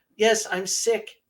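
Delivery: put-on very high, tiny little child's voice. Retelling a ghost recording from a tour: imitating a little child's voice. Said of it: "A little child's voice".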